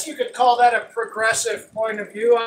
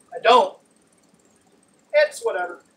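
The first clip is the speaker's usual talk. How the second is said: usual speaking voice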